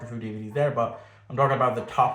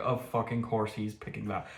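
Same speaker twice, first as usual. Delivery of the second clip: soft, exasperated mutter under the breath; 7 dB quieter than usual. Speaker imagines someone's reaction on finding out the pick: imitating a muttered aside. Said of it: "muttered under his breath like".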